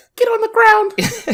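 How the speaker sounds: squeaky, super high-pitched, loud tough guy voice, barked. Speaker shows how a superhero would sound: super high-pitched Batman voice. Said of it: "his voice was like super high pitched".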